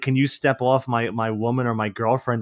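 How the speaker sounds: usual speaking voice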